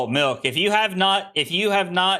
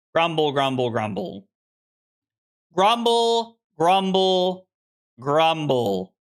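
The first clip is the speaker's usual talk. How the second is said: ordinary talk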